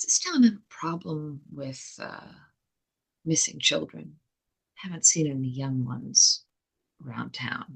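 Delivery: very quiet voice. Leaning in to ask the sheriff a pointed question, very quietly asking. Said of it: "very quietly ask".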